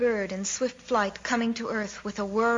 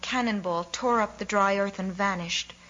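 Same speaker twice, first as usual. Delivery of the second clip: ordinary delivery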